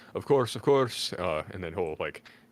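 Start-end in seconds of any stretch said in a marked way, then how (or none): 0.2-1.2 very loud, hasty, pitched-up half-yell. Playing a character answering a voice at the door: kind of yelling. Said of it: "Tim's will kinda yell".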